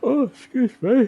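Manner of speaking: very loud, very high words spoken through a yawn. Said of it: "excuse my yawning".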